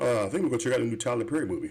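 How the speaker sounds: play-acted, tongue-in-cheek, sarcastic joking tone. Retelling how marketing executives joked about Tyler Perry movies: imitating sarcastic joking. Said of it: "joking as if they would".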